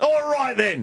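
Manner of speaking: put-on cute, high English policeman accent. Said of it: "They talk in that cute accent".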